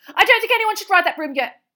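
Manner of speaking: piercing, shrill cry, very high and loud. Reading a novel aloud, voicing a character's warning, shrill voice. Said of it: "said Hermione shrilly".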